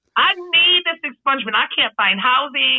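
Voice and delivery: furious, angry ranting.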